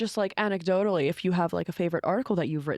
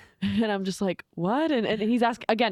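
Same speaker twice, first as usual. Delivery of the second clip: plain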